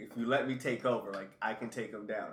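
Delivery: normal talking voice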